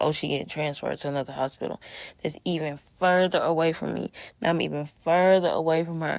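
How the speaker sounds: normal talking voice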